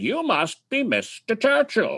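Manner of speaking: very high, swooping, ringing storyteller voice. Retelling a man greeting the speaker waiting in line, in his Mark Twain voice. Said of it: "in his Mark Twain voice".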